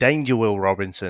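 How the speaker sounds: plain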